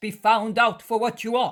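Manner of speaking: ordinary delivery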